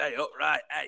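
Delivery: put-on old-style game show host. The speaker shows how his 1970s character talks, doing the Ken Nonce voice. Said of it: "talks a bit like this".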